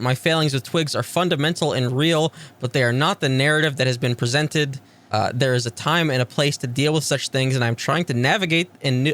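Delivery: ordinary delivery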